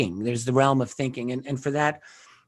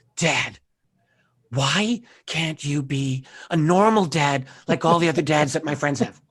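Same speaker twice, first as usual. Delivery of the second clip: put-on fed-up, exasperated teenage voice. Father retelling his daughter's complaint in his office, imitating exasperated daughter. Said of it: "in that exasperated voice that she had".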